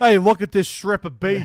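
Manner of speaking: put-on loud, poorly done New York accent. Imagining a New Yorker who found it one day: attempted New York accent. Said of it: "That sounded Australian as shit".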